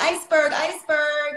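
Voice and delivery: high-pitched loud yelling.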